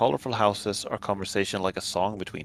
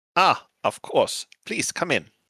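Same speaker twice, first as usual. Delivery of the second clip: loud, high, put-on German accent; 7 semitones higher, 5 dB louder than usual. Voicing a character who welcomes the arriving group inside, in a German accent. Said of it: "doing like a German accent".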